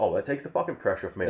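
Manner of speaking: ordinary talk, nothing marked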